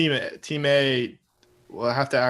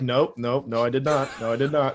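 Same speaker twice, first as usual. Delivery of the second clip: put-on frightened voice. Retelling a left guard's denial to his quarterback: imitating a scared answer. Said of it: "the scaredest answer of all time".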